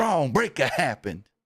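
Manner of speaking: imitated North Carolina accent. Recalling how good the way he said it was, quote him in Shane Helms's North Carolina accent. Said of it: "that North Carolina accent that uh, Shane Helms has".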